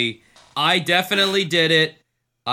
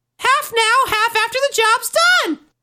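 high-pitched puppet voice; 4 dB louder than usual. Playing Elmo, answering a question about how he makes a living, high Elmo voice. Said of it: "real high?".

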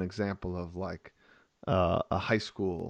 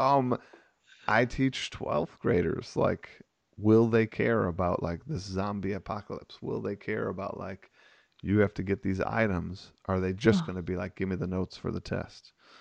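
plain

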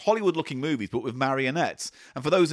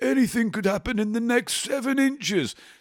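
squeaky, very high-pitched voice; 9 semitones higher than usual. Retelling a bedtime joke with a girlfriend: Parker voice. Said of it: "I do me old Parker voice".

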